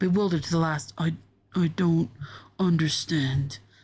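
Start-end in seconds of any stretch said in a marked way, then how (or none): 1.0-3.6 low mumble from the throat. A dying bear, bewildered to the last, speaks its final words, throaty mumble. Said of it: "mumbled in its throaty voice".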